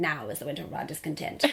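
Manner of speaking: stiff, rattled-off delivery. Imitating Laurence Olivier as Richard the Third: Laurence Olivier impression. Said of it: "so I could do my impression".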